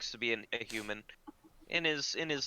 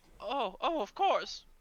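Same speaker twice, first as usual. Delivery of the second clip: put-on old man voice, much higher; 12 semitones higher than usual. Game master voicing an old man selling cheese, answering a customer, old man voice. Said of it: "The old man brings you".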